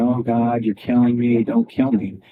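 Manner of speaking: play-acted crying, tearful wailing and bawling. Retelling what actresses said in trauma drills: imitating someone bawling and crying. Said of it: "they'd be bawling and crying and saying".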